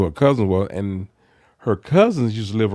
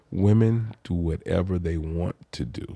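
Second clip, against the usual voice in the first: slower and quieter delivery; 3 semitones lower, 5 dB quieter than usual. Asked by the co-host to repeat a statement more slowly, saying it slower. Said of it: "You have to say that again slower".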